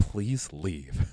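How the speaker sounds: soft half-whispered voice, no full voice. Retelling how a fan spoke as they left: imitating a half-whisper. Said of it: "this one guy just whispers".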